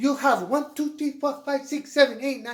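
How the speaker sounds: put-on heavy Italian accent. Telling a family story, repeating how a relative used to count the trees aloud, in a heavy Italian accent. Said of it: "with her heavy Italian accent".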